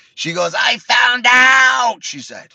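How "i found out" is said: put-on screaming voice, higher and louder. Retelling what Laura said at Burger King: imitating Laura screaming. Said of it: "She's screaming".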